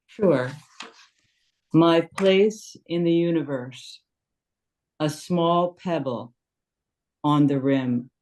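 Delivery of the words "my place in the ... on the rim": slow, deliberate, unhurried reading aloud. Asked by the listener to read the haiku again slowly, reading slowly. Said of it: "Could you read it again slowly?".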